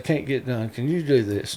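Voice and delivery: ordinary talk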